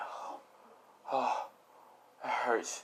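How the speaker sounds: quiet, breathy groan of pain.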